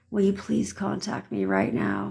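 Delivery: meek, mousy, timid, quiet little voice. Showing listeners how not to ask for something, in a timid little quiet voice. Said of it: "timid little quiet little puppy dog mouses".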